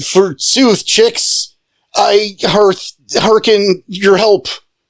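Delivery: faux old-fashioned English speech. Retelling Ricochet standing up to address the crones, in Ricochet's voice. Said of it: "Ricochet stands up and goes".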